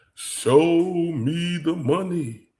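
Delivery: high, slow, drawn-out delivery. Confronting Doctor Tubby about doing the job, throw in a quote in your Jerry Maguire voice. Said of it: "in my Jerry Maguire voice".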